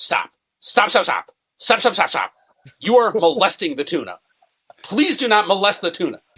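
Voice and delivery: stern, strict, high-pitched delivery. Retelling how a boss stopped them from handling tuna: imitating a boss talking sternly. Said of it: "she would talk really, really sternly to them".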